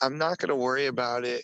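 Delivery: ordinary talk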